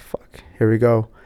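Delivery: plain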